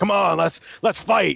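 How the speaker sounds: grumpy, raspy growl. Playing Batman on Free Comic Day, the speaker goads people in the store: gruff, grumpy Batman voice. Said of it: "kept going with the gruff, grumpy Batman".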